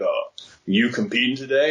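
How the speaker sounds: put-on deep booming voice. Retelling how a hooded stranger asked a question: imitating a very deep booming voice. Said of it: "sounded like ... if God and James Earl Jones had a baby".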